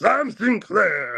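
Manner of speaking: yelled out very high. Narrating a scene, a voice calls out from the window: Love's voice yelling a name. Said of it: "yelling at him".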